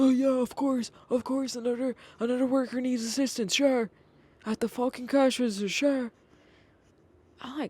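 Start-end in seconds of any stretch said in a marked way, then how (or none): 0.0-6.1 put-on, high, irate old-man voice ranting. Retelling how an aggravated grandpa reacted at the store: imitating an angry old man. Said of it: "calm the fuck down".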